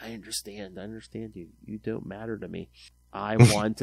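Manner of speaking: put-on, imitated whisper. Retelling a comic scene where a character starts talking: imitating a whisper. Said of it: "all of a sudden he starts whispering".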